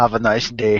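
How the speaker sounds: put-on stiff, wooden action-hero voice, horrible Austrian accent. Act out the Terminator walking up to someone, as a bad Arnold Schwarzenegger as the Terminator. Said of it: "as the Terminator walking up and going".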